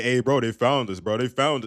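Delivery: derisive, scornful tone. Retelling in disbelief what a contestant just said: mockingly imitating a contestant. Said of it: "this motherfucker did not just say".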